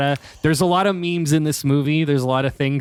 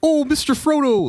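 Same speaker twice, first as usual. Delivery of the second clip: high-pitched hobbit voice; 12 semitones higher than usual. Imitating Sam's way of saying Mister Frodo: Sam voice. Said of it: "that, that voice".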